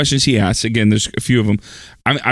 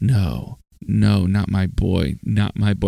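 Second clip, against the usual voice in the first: slow, grief-stricken sobbing, voice breaking down; 4 semitones lower, 4 dB quieter than usual. Retelling a film scene where the son is dead: imitating Robert De Niro sobbing. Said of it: "And he just starts sobbing".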